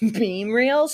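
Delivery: laughing through the words. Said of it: "Sorry, I'm laughing at my own joke".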